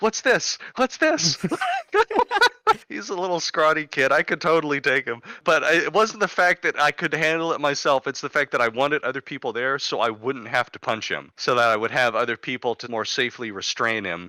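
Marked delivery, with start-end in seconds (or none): 0.0-1.4 very high, squeaky, wonder-struck cartoon voice. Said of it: "like Jack Skellington finding Christmas Town".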